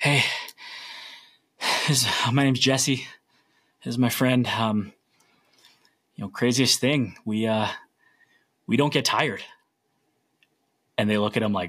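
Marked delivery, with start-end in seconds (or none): 0.0-9.4 winded, out-of-breath, huffing and puffing speech. Retelling a runner's words while others cheer: imitating someone huffing and puffing. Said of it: "huffing and puffing".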